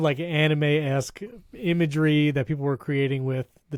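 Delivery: ordinary delivery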